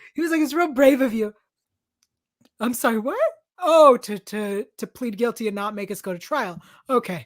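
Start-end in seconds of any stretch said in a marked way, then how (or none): 0.4-1.3 mock sincere, approving, congratulatory tone. Retelling how a character praised a confession: imitating Finn congratulating. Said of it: "sounded like you were congratulating him".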